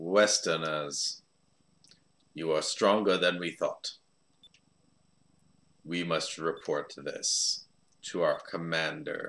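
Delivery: deep voice. Reading a game character's lines aloud: deep voice. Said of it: "I'm giving him a deep voice".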